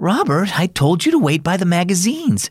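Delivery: gentle kindly scolding. Grandma finds robert, whom she had told to wait elsewhere, scolding gently. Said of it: "she scolded gently".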